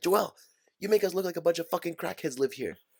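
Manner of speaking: loud scolding yell. Telling a story about his mom, imitate mom yelling. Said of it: "my mom would used to yell at me".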